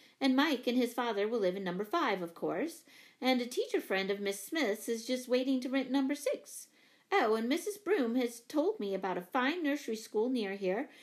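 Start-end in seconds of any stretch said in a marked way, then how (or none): none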